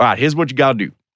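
matter-of-fact, lecturing, advice-giving tone. Retelling being given parenting advice, imitating Matthew McConaughey. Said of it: "lectured by Matthew McConaughey".

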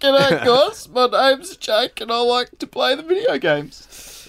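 very high, very loud, effortful strained struggling voice. In a segment of doing the co-hosts' voices, imitating Jake. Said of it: "You sounded like you were struggling to say something".

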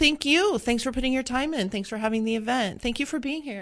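normal talking voice

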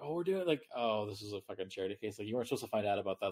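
condescending, patronizing tone. Retelling what the other team said after finding out: imitating a condescending tone. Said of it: "so condescending".

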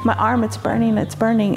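plain

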